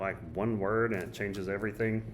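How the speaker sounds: plain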